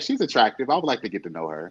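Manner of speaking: ordinary talk, nothing marked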